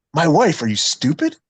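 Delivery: plain, natural, everyday speaking voice. Retelling an answer given to Logan Paul: imitating Dominik Mysterio's real voice. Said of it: "his real, like, "This is how I talk" voice".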